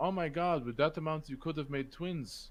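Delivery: put-on broken Russian accent. Retelling what a woman said at the end, in her broken russian accent. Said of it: "in her broken Russian accent".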